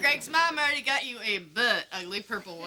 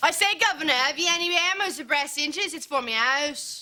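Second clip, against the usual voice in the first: phony, put-on London cockney English accent; 3 semitones higher than usual. On a trip to the hardware store, speaking in a phony English accent. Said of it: "We can use our phony English accents".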